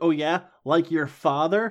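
unhurried, smart-mouthed, quippy delivery. Retelling the Slayer's reply to a vampire: imitating a quippy retort. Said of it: "gets real quippy with her".

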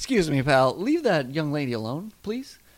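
put-on Midwestern everyman accent. Speaker retelling a man on the subway defending a young lady; midwestern accent. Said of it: "probably a guy from Midwest".

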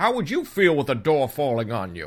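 animated character voice with loose, swooping pitch. Retelling a scene where a door falls on her: Tegan impression. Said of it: "not a very good Tegan impression".

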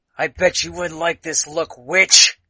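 loud, menacing hissed voice. He hisses at the one he calls witch, hissing. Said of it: "He hisses at you".

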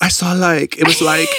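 put-on full Valley Girl voice, high, rambling. Joking that the prophet Ezekiel talks like a Valley Girl: Valley Girl voice imitating Ezekiel. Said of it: "He's like the Valley Girl of the Old Testament".

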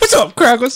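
very high, mocking caricatured voice.

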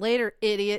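yelling across a distance. Retelling calling to a friend in a full bar: imitating own yell. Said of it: "see me just yell".

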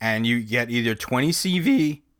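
voice cracking. Listing a knife's steel choices, voice cracking. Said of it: "Why did my voice just crack?".

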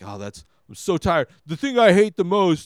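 tongue-in-cheek complaining. Imagining complaining about a movie's bird scene: impersonating himself complaining. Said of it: "this is my impersonation of me".

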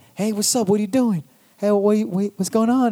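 twitchy street guy voice. Retelling someone coming by the car window: imitating the stereotypical crack guy. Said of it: "the stereotypical crack guy, fucking itching".

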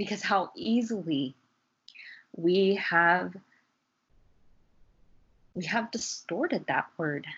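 slightly choked voice, catching with emotion. Sharing personal beliefs with a listener, a little choked up. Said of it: "I just get a little choked up".

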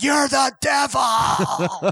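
high, slow screaming.

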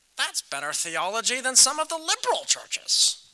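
very loud, nasal professor voice. Retelling his professor's reply to his point about the demon: nasal professor impression. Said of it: "who has the nasally voice".

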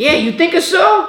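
put-on thick Italian accent. Retelling an uncle's reply about playing quarterback: Uncle Dino impression, thick Italian accent. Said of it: "He's got this thick Italian accent".

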